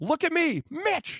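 high, pleading yell.

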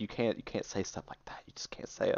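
acted, distressed, disapproving, upset hushed whisper. Retelling his mother's reaction to a joke: imitating mom being upset. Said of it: "I watched her just be upset".

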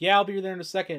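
high, fast, loud, mocking breezy reassurance.

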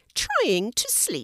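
mildly irritated, a bit bothered, slightly cross. Mango, trying to sleep, answers the snake's question a little crossly. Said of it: "a little crossly".

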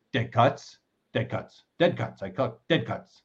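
mock indignant, almost angry, insistent repeated declaration. Imitating a buddy who collects cut autographs: imitating Rich sounding mad. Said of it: "He almost says it like, "I'm mad at you for dying."".

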